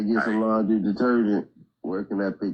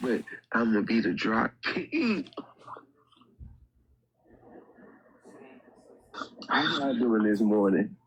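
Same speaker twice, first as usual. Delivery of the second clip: soft, hushed whisper, barely voiced; 4 dB quieter than usual. Greeting listeners in the morning from home, whispering. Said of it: "I'm whispering because I'm at home".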